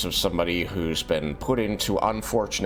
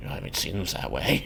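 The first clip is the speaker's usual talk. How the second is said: small, tiny little voice; 3 dB quieter than usual. Voicing a second figure who answers her question, in a small voice. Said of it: "a small voice going".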